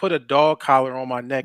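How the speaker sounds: ordinary talk, nothing marked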